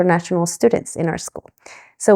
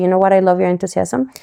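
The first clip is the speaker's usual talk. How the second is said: plain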